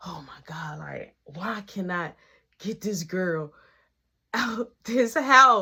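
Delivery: mock-panicked voice. Retelling sitting on the bed late at night, desperate to get a girl out, retelling freaking out. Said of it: "I'm over there freaking out".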